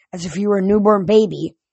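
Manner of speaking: ordinary delivery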